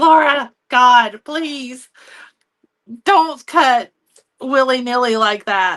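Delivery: put-on slow, loud, stretched-out screaming. Imitating someone screaming about cutting paper carelessly: imitating Dawn screaming.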